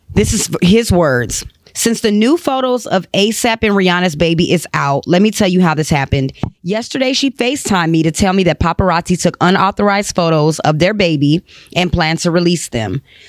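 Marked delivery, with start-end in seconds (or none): none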